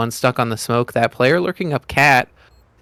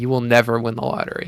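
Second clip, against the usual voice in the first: snide, sarcastic, put-on commercial announcer voice. Acting out a gambling ad staring at the camera: put-on sarcastic ad voice. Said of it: "a really sarcastic, just, like, person staring at the camera going".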